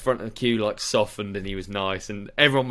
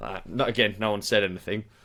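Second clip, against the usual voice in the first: usual speaking voice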